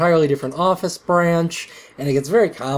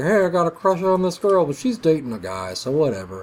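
easygoing, offhand, casual office-worker character voice. Summarizing The Office for listeners, doing a Jim impression. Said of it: "that's my Jim impression".

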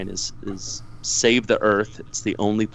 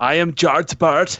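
haughty, raised put-on German accent; 7 semitones higher, 5 dB louder than usual. Given an accent to say a line in, speaker does an arrogant German accent. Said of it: "You're going to have to do an arrogant German accent".

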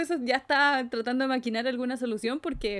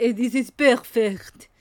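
put-on mock French accent; 7 dB louder than usual. Quoting how someone in the story says it with a French-type accent. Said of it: "con el acento tipo francés".

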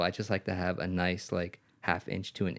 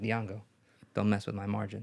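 mock-serious, sarcastic delivery. Retelling what the speaker told dianga about the flyer, retelling serious sarcasm. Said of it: "I said it in a serious, like, sarcastic way".

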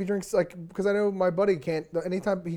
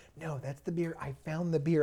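soft, hushed stage half-whisper; 2 semitones lower, 8 dB quieter than usual. Retelling what a girlfriend said about a beer website: imitating someone half-whispering. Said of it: "She's whispering, she goes".

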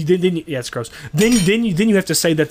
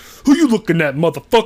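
attempted put-on bass voice, faked and would-be deep; 4 dB louder than usual. Speaker mimics a friend's impression attempt; put-on bass voice. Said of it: "I'm going to put some bass in my voice".

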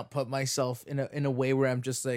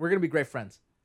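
plain

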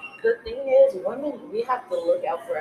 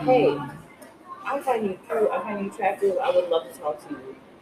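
ordinary delivery

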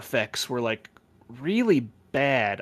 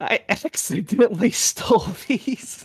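mock bawling, high, tearful crying voice; 8 semitones higher than usual. Retelling confessing to a teacher in first grade, imitating own crying. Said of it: "while I'm crying".

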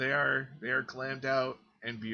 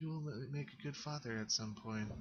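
barely audible, soft, breathy half-whisper, very quiet; 10 dB quieter than usual. After an embrace, a game character speaks to the player's character: half-whispering. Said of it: "And she whispers".

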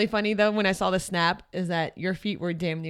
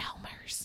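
breathy, quiet whisper. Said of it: "whisper in her ear".

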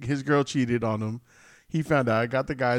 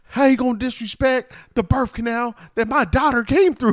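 higher-pitched mock screaming; 11 semitones higher, 8 dB louder than usual. Telling a story from the car, acting out a man screaming at him, retelling a scream. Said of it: "he's screaming".

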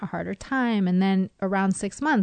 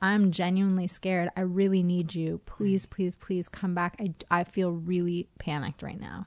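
ordinary talk

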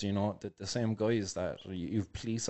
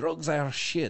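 fake, higher-pitched put-on French accent; 7 semitones higher, 3 dB louder than usual. Quoting a man on a medical cannabis announcement: put-on French accent. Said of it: "I'm going to stop with that French accent".

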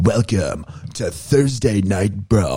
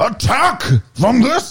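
very high-pitched yelling cry; 4 dB louder than usual. Imitating a voice actor's role: Kevin Michael Richardson yelling. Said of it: "he's yelling".

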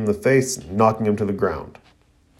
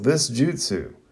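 plain reading voice

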